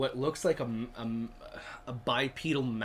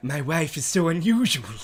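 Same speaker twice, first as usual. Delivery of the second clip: very loud, booming put-on character voice; 4 semitones higher, 10 dB louder than usual. Imitating a friend's impression after being asked for a spooky impersonation: Vincent Price voice. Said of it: "this is my impression of his impression".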